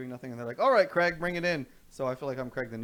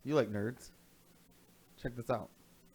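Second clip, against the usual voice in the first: ordinary talk, nothing marked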